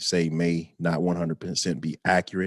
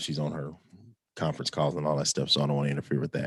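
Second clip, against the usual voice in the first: hushed, low, rushed murmur; 3 semitones lower, 4 dB quieter than usual. Speaker keeps it down so as not to disturb his wife's conference calls: talking low. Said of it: "I'm talking low because my wife's in there".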